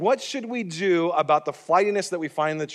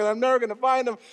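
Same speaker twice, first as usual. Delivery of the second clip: mock sobbing, high, tearful crying voice; 7 semitones higher than usual. Retelling being lost as a child and crying: imitating own past crying. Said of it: "And now I'm crying even more".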